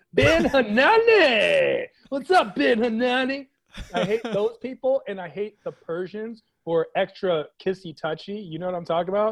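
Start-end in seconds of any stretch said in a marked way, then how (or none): 0.2-3.5 loud, very slow douchebag bro voice. Imitating people who greet him by name, in a douchebag voice. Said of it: "that was my D-bag voice".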